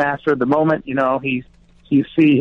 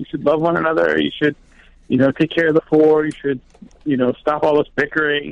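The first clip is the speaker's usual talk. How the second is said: normal talking voice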